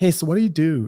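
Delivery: put-on American accent. Retelling what girls in la would ask him, in an american accent. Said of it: "your your accent was perfect".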